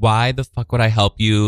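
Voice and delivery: ordinary talk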